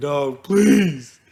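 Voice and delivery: voice cracking and breaking, begging tone. Retelling begging while outnumbered six to one: retelling a begging, breaking voice. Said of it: "doing, like, the breaking voice and, like, begging".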